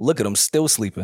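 snide, sarcastic remark.

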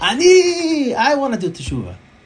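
high, loud screaming. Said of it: "the entire kehillah would scream out".

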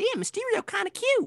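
mocking, high, loud, squealing, chatty gossipy girl voice.

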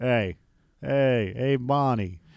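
drawn-out drawl. Doing a cartoon character's greetings, speaker uses a slow drawl. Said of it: "You got to have that slow drawl".

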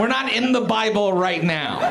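normal talking voice

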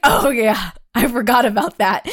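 mock hysterical laughing. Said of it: "he just started hysterical laughing".

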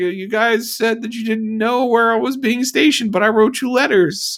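high, loud, whiny complaining voice. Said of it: "little, little whiny".

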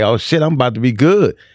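plain

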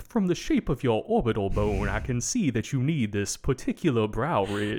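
put-on Louisiana accent, old-time gentleman voice. Imagining how the shop guy talks, doing a 19th-century British phrenologist voice. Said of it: "he just talks like a racist, like 19th century, like British phrenology guy".

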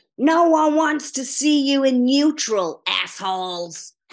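put-on broad Chicago accent.

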